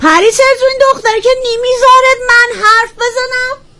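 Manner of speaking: put-on high-pitched old-nanny character voice. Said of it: "خود ننکتی براتون صحبت بکنه".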